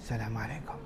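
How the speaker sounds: very soft, very quiet, tiny voice. Showing a greeting said too softly to count, small quiet voice. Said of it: "kalau salamnya gini, ... suaranya kecil".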